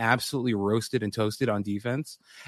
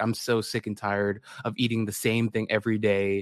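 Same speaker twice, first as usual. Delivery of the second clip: ordinary delivery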